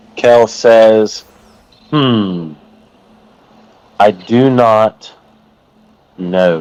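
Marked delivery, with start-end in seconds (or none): 1.9-6.6 deep, very slow, drawn-out, expectant musing voice. A game master voices a character answering the group's question, very slow and deep. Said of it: "Very slowly, with a deep voice".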